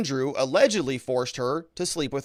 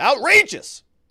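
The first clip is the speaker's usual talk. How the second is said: shrill, loud, very high screamed single word; 10 semitones higher, 8 dB louder than usual. Act out the woman who taught you this statute, imitating someone's scream. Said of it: "And she would scream it".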